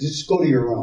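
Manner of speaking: ordinary delivery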